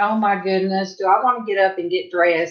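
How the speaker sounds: ordinary talk, nothing marked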